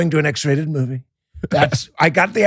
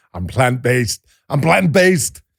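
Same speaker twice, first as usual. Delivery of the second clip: put-on low, slow voice drifting into a Scottish accent; 4 semitones lower than usual. Joking about a vegan star, attempting an Arnold Schwarzenegger impression. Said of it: "That was Scottish. That was like groundskeeper Willie".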